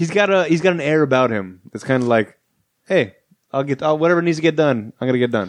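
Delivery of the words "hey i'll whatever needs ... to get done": put-on Italian accent. Describing Chris Pratt's heroic air to another speaker, Chris Pratt in an Italian accent. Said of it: "making an Italian in this accent".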